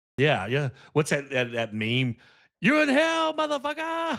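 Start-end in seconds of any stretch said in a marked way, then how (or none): 2.6-4.2 shrill yell, voice pitched way high. Quoting a meme in which Keith David yells at someone: imitating Keith David yelling. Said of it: "I'm laughing just the way you said that".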